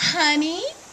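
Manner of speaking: honey, voice lifting at the finish. Imitating how the nice girls start: rising pitch at end of honey. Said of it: "How the voice went up there at the end?".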